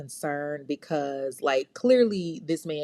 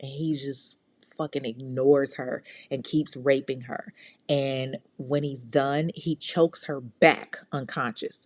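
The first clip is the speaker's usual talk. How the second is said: normal talking voice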